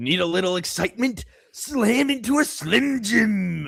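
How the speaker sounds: high pitch with every word stretched out. Reading out a chat message from Captain Davies: Randy Savage impression. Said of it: "my Randy Savage impression".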